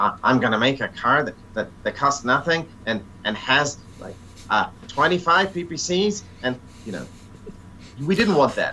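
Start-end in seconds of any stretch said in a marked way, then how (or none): 0.2-6.2 put-on high-pitched nasal nerdy voice. Explaining what the designers didn't want, the speaker voices an imagined nerd in a nasal nerd voice. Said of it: "that nasal nerd voice".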